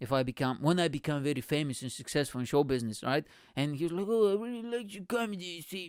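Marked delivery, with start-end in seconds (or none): 4.1-5.9 put-on stock British accent, pitched slightly higher. A comedian imagines meeting Richard Branson someday, doing a Richard Branson impression. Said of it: "this is how he sounds ... the only British accent I can do".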